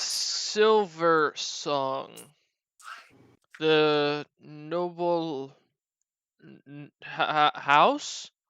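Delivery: put-on very slow, stumbling, halting, stretched, noble-sounding changed accent. Voicing a shipmaster who hears Common: switched accent, speaking much slower. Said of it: "kinda switches up his accent and kinda starts to speak a lot slower".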